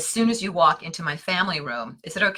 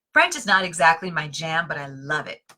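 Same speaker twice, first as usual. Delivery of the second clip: ordinary talk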